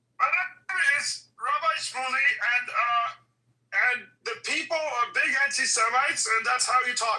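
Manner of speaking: high, stressed-sounding voice. Trying out an impression before a clip of Rabbi Shmuley is played: Rabbi Shmuley voice. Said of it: "let me see if I can do his voice".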